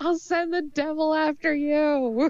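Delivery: very slow, high shout through laughter, drawn-out you. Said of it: "doing this little shouting back and forth".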